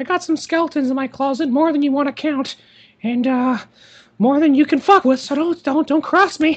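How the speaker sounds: menacing, threatening voice, heavy with menace. Imagining a cartoon mascot threatening someone over a business deal: imagined Mickey Mouse threatening. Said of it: "that's what I can imagine with Mickey now".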